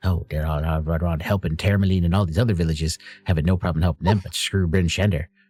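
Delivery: grumbled mutter under breath. Voicing a dwarf who mumbles to the other dwarves, muttering under breath. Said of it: "You can kind of hear under her breath".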